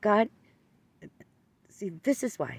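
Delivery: play-acted heated, accusing, angry yelling. Retelling yelling at god while driving home, imitating angry yelling. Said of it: "I started yelling at God".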